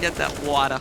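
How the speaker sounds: New York-accented speech. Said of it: "I was gonna say it with a New York accent".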